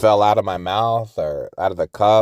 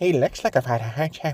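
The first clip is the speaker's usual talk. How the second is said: put-on barely intelligible, mumbled Irish accent, pitched up; 6 semitones higher, 3 dB quieter than usual. Quoting a hard-to-understand movie character, in an irish accent. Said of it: "character that was kind of like Irish".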